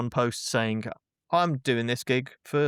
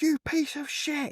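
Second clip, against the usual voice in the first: mock screaming, higher. Retelling a phone call from a man with an unpaid invoice: imitating someone screaming. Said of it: "screaming top of his lungs down the phone".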